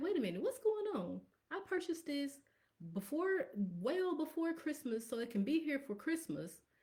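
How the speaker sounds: high-pitched, wide-swinging, alarmed and puzzled tone.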